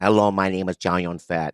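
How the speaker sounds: slow, careful, overpronounced English, each word sounded out. Retelling an interview by doing a Chow Yun-fat impression with overpronounced English. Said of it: "So he would go".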